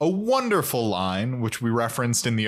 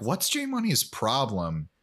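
ordinary talk

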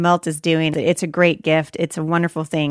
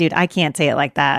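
ordinary talk

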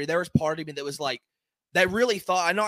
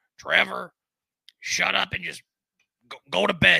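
slow, rough, creaky, heavy raspy voice. Acting out an imagined future wife telling him to go to bed: heavy smoker's voice. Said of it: "Why does your wife talk like that?".

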